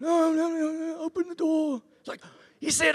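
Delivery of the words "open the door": put-on mafia voice, much higher, faster. Telling a story about a guy lying down dying, in a mafia voice. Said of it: "I'm going to do the mafia voice".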